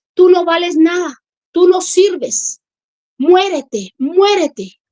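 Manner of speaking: malevolent demon voice, wicked, menacing, sinister, taunting. Retelling the voice she heard speaking to her, imitating an evil voice. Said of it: "se ríe, pero así maléficamente".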